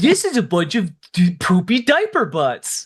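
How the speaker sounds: animated critic voice with swooping pitch. Imitating a caller's tone, likened to Aaron Hansen's Nostalgia Critic impersonation. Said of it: "He sounded like Aaron Hansen from Game Grumps doing his, like, nostalgia critic impersonation".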